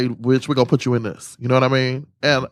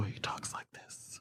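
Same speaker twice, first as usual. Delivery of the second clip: mock soft speech, lower and quieter; 4 semitones lower, 23 dB quieter than usual. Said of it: "Yeah, quiet".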